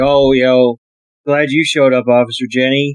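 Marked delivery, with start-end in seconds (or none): none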